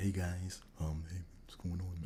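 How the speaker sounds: very quiet, soft, hushed voice. Retelling how a manager greeted the staff: imitating Jeff's soft voice. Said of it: "he had a soft voice".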